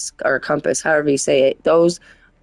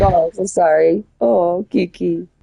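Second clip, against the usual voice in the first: mock rueful, slow, remorseful, sorry-sounding tone. Retelling how a friend apologizes to a child he hurt: imitating Zobai apologizing remorsefully. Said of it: "He'd be feeling bad".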